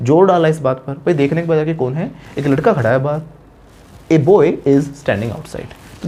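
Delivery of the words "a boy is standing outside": a stressed, drawn out very long and slow. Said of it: "जब हम जोर डालेंगे तो हम ए बोलेंगे".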